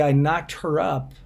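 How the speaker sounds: ordinary talk, nothing marked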